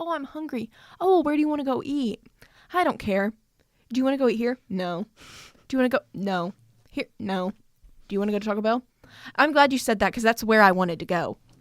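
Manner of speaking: mock-indecisive voice. Speaking to someone who calls themself indecisive: mimicking the listener's indecision. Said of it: "You're like".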